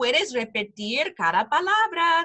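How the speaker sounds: ordinary delivery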